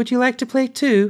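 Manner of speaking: put-on sweet, very high little-girl voice. Narrator voicing a little girl speaking to the narrator, in a sweet voice. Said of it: "she said in a sweet voice".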